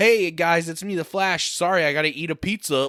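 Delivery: mocking put-on superhero voice. Mocking how the Flash is written in the movie: mocking the Flash. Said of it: "It's like".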